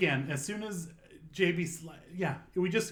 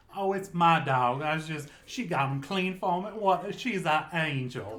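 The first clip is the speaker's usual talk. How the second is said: mock, put-on Texas drawl; 4 dB louder than usual. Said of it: "why are you talking with the Texas accent".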